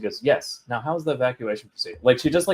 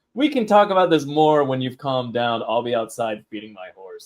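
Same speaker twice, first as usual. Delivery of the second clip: ordinary delivery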